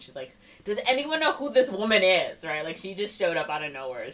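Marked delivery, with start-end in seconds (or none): 0.6-2.4 put-on, high, really put-out, super upset voice. Retelling a movie scene where a wife questions a stranger: imitating someone super upset. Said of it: "super upset".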